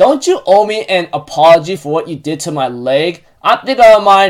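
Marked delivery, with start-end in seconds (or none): none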